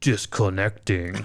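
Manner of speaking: put-on really deep headphone announcement voice. Imitating the headphones announcing that they are turning off: imitating a really deep headphone voice. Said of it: "Like this really deep voice".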